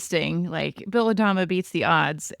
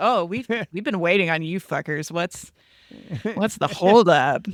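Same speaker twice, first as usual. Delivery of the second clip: laid-back, fast, casual cool-guy swagger. Retelling what someone said to the returning guards, in a fast cool-guy voice. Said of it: "Romo just does a really fast, like, cool guy".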